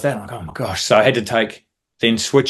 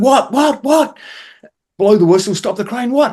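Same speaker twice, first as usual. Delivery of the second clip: acted frantic panic, much higher and louder; 13 semitones higher, 3 dB louder than usual. Retelling a crane lift where a hook came off, acting out past panic. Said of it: "And I'm panicking".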